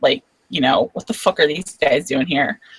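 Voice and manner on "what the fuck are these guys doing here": fake angry whisper, quieter. Speaker describes how she will lean on the table, in a mock-angry whisper. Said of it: "act like she's pissed off".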